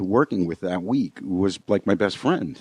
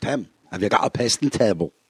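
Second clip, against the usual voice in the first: put-on Scottish brogue. Quoting a friend's wallpaper guy who had no equipment, Scottish accent. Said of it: "A little more Scottish brogue in there".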